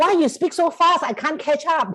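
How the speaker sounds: high, loud, frustrated outburst. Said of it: "I actually swear".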